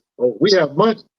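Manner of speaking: ordinary delivery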